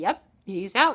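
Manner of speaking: ordinary talk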